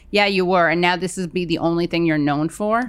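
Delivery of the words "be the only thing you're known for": ordinary talk, nothing marked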